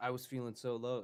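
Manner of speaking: ordinary talk, nothing marked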